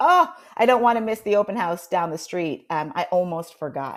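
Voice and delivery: ordinary delivery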